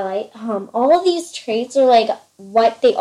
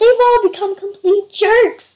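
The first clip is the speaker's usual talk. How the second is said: play-acted very high, fed-up yell; 10 semitones higher, 4 dB louder than usual. Speaker recounts a favorite scene where a character yells out, imitating her yell. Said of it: "and then she just yells out".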